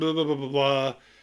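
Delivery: ordinary delivery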